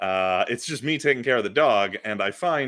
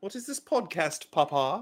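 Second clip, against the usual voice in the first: put-on soft, high little British child's accent; 7 semitones higher, 6 dB quieter than usual. Joking about viral British toddler videos, a parent voices their kid in a put-on British toddler voice. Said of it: "why does your kid have a British accent?".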